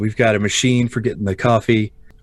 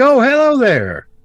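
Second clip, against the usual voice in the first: very high-pitched role voice; 4 dB louder than usual. Voicing a character who waves at the player: voicing Keith Barlow. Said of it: "He's like".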